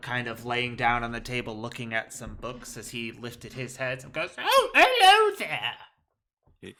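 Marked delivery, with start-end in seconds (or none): 4.4-6.7 put-on booming, very high-pitched, loud elderly gnome voice. Voicing an old gnome man in a magic shop greeting visitors: old gnome man voice.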